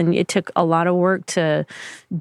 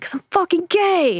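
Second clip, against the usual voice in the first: put-on shrill, very high screaming; 11 semitones higher than usual. Retelling being asked why they were kicked out, acting out screaming the answer to him. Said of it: "screaming this to him".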